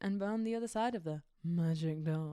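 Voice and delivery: bad, rough character voice. Imitating how Rose says a line: bad Rose impression. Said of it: "in my shit impression".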